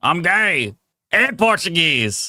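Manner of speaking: fake rough drawling voice. Recording a requested soundboard clip, yelled in a gruff voice. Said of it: "yell out in a gruff voice ... That came out more redneck".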